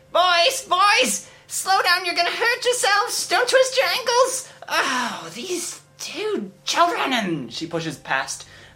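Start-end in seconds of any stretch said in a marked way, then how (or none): 0.2-7.2 exasperated mother voice, much higher. A narrator voices a mother chasing her running boys, exasperated mother. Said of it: "an exasperated mother".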